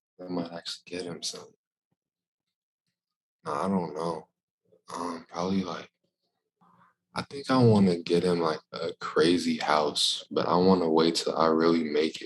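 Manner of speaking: hushed whispering voice. Speaker answers what gift they'd get their dad, who's in the other room; whispering. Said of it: "I gotta whisper".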